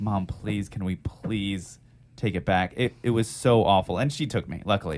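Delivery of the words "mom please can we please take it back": earnest, imploring, slow and drawn-out begging. Retelling how the speaker begged their mom: imitating own past begging. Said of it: "I begged my mom".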